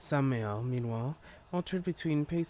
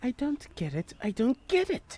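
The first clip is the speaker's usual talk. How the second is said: put-on very high small-child voice; 12 semitones higher, 4 dB louder than usual. Trying out voices for a character after some hesitation: small child voice. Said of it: "It's a small child voice".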